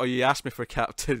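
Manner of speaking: ordinary talk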